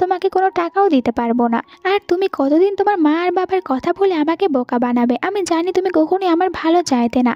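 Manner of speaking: ordinary delivery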